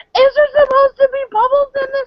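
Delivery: very high, loud, alarmed, freaked-out delivery. Retelling a tea drinker's reaction to the bubbles: imitating someone freaking out. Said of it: "freaking out".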